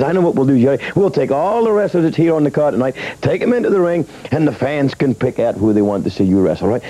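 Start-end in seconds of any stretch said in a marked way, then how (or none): none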